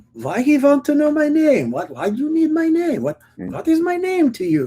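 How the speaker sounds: very high, swooping, put-on Eastern European accent. Speaker retells a woman a man asked for her name: eastern european accent. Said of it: "she had like an Eastern European accent of some kind".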